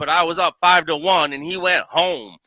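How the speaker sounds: loud, high-pitched street-style voice. Retelling what Johnny Callaway said, imitating Johnny Callaway. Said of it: "This is in Johnny Callaway's voice".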